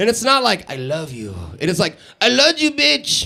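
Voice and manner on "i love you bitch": high, put-on Spanish accent of non-native English speaker. Showing how cousins who learned English later really sound, in a Spanish accent. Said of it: "grew up Spanish, learned English later".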